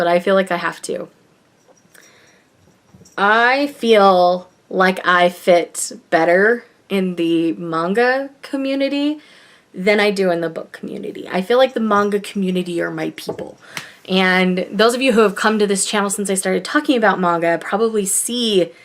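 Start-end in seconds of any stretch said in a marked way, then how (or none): 0.0-13.6 emotional voice, on the verge of crying. A channel host speaks to their viewers, trying not to cry. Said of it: "I'm trying not to cry".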